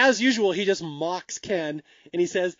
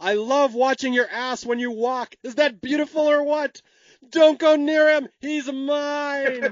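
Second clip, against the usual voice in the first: high, drawn-out, screaming taunt, "mine" stretched long; 7 semitones higher than usual. Retelling a movie scene as someone walks away: imitating Otto screaming. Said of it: "Otto screams out at the top of his lungs".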